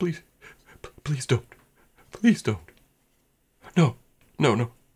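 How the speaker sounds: very high-pitched, desperate, whimpering pleading tone. A faint male voice heard across the chamber, whimpering and pleading. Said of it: "a male voice uh, whimpering and pleading".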